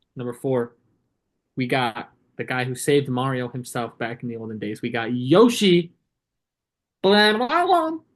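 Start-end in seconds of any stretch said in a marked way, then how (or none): 7.0-7.9 noises popped out at very high pitch. Introducing Yoshi on a ranked list, then doing a Yoshi impression.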